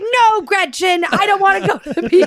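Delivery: angry, fed-up, flat-out mad tone. Retelling how the stepdad refused the beach trip, imitating him being mad. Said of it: "he's just so mad".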